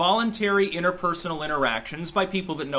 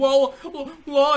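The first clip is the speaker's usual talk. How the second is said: loud, high-pitched whining voice; 10 semitones higher, 5 dB louder than usual. Mocking a politician the speaker finds grating, in Cuomo's whiny, crying voice. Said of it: "his patented trademark whiny voice".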